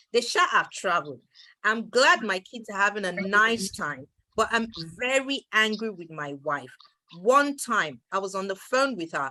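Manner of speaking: ordinary talk, nothing marked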